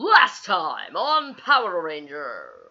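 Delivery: deliberately bad, loud TV announcer voice. Trying out the old recap opener, crappy Power Rangers announcer voice. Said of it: "That was my really crappy announcer voice".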